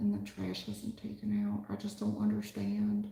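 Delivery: put-on kind, sweet tone. Acting out what this dude says when he comes home: imitating a kind, sweet tone. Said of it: "he is so kind and sweet when he says it".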